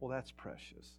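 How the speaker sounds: whispered, dry, ironic, sarcastic, meaning the opposite. Explaining how people say precious to mean not: sarcastic, meaning the opposite. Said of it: "Sometimes we say precious like not".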